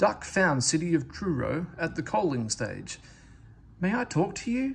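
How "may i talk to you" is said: timid, shy, very high-pitched little voice. Duck approaches the famous engine at the coaling stage and asks, shyly. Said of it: "he asked shyly".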